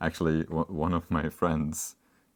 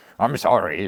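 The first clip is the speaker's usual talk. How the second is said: insincere, plainly not meant, unconvincing; 4 semitones higher, 10 dB louder than usual. Showing how an apology can sound: mock unconvincing apology. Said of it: "then it just doesn't really sound like you are".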